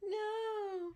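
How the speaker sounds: crying, tearful voice.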